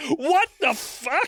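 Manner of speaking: very high, slow, squealed mock outrage in French accent.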